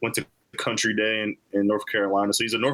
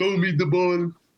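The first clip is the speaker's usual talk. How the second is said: easygoing, unbothered, laid-back, higher voice; 8 semitones higher than usual. Imitating a receiver who wants the ball: Milan Spiller impression. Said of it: "That's my Milan Spiller in-game impression".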